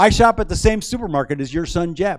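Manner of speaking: very loud, cheerful, perky, high-pitched blurt. Speaker retells nervously blurting a line to a woman; retelling a loud, perky line. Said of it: "in a loud, cheerful, perky voice".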